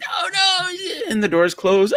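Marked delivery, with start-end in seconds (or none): 0.0-0.7 very high, panicked, frantic crying shout. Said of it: "Paul is like".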